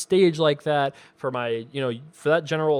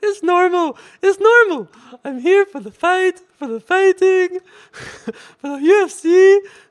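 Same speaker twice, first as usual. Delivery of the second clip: put-on voice, very high, loud; 10 dB louder than usual. Answering a viewer email that praises the voice: Anderson Silva voice. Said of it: "Why would you not laugh at my Anderson Silva voice?".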